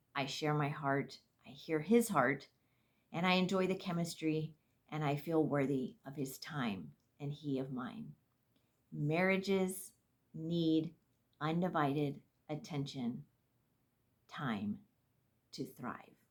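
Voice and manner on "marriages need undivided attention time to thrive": unhurried, slow, deliberate, weighted delivery. Speaker points out she is saying this line slowly. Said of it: "I'm saying that slowly".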